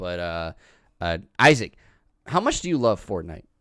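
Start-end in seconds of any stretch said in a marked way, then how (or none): 1.4-3.4 sarcastic tone with swooping tune. Asking another speaker a teasing question: sarcastic tone. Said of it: "I actually say this in a sarcastic manner".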